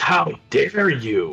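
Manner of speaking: loud, sudden, yelled-out delivery. The storyteller voices the father stepping around the corner, shouting. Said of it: "just shouts".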